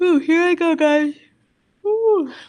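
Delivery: words stretched by yawn. Explaining drug classes to viewers, yawning. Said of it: "so sorry, yawning".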